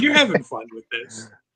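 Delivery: very loud, condescending, talking-down tone. Retelling what a co-host said about a bit: imitating a condescending tone. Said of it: "really kinda does sound condescending".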